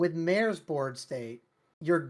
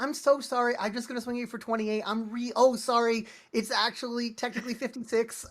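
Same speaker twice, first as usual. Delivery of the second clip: put-on polite apologetic voice, pitched higher; 8 semitones higher than usual. Imitating a friend who apologizes while attacking: imitating Emma's polite apologies. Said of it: "I love a polite Bellow player".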